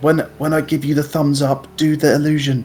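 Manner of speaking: whispering. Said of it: "And then I whisper to Hopper".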